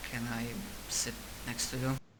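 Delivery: very quiet, small, subdued voice. Reiko, thrown off by stress with school, asks to sit next to someone, very quiet and subdued. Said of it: "so in a very quiet, subdued voice".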